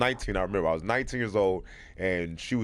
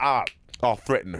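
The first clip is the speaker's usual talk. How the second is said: ordinary talk, nothing marked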